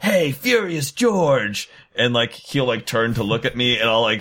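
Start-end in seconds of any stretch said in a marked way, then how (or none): 0.0-1.7 acted, high-pitched, shouted yell. Acting out a character shooting out of a chute at a foe: yelling in character. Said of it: "I yell".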